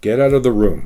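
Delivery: pitch falls on room, statement tune. Explaining question versus statement intonation, falling pitch at sentence end. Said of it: "the sound of the voice goes down".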